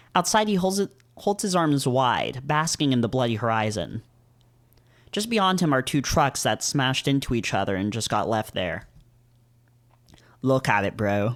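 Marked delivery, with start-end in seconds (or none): 10.5-11.4 fake British accent, lower. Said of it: "Do British people say bro?".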